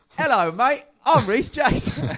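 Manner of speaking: put-on weird cockney accent, very high and loud. Giving a speech running for head boy, the speaker slips into a weird cockney voice. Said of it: "doing this weird cockney voice".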